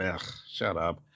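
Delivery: low, soft dismissive grumble. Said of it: "And Thorfinn going".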